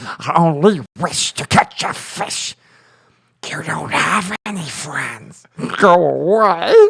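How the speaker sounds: creepy creature-like voice, "away" drawn out. Continuing a requested impression, the speaker does Smeagol voice. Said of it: "Do do Smeagol".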